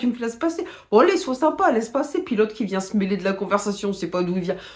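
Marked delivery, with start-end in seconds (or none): 0.0-2.2 put-on loud, high working-class Parisian street accent. Retelling drivers calling out to each other in traffic, in a working-class Parisian accent. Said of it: "avec l'accent titi parisien".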